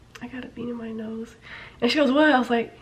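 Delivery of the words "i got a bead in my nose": hushed, very quiet, barely audible half-whisper. Retelling an exchange with a teacher, half-whispering. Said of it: "And I'm whispering to you".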